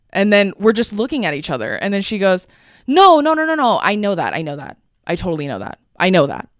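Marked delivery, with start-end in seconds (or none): 2.8-6.3 mock startled, caught-off-guard voice. Retelling how a woman called her by the wrong name: imitating someone caught off guard. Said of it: "she's so caught off guard".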